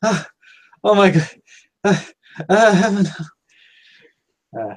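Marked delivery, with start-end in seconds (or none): 0.0-3.1 winded, gasping for air, high breathless stammer. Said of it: "kinda all out of breath".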